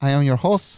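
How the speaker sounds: mock English accent, announcer style. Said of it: "use that accent the whole time".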